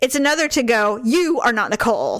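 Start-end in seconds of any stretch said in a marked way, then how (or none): 1.0-2.2 put-on curt, snippy, sassy, attitude-laden tone. Contrasting two ways a teacher could react: imitating a snippy attitude. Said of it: "With an attitude immediately".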